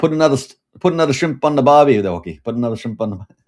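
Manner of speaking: bad fake Australian accent drifting Irish, loud, fast. Joking about Wookiees celebrating the holidays: bad Australian accent. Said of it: "I say it like an Irish accent, and it's trying to be Australian".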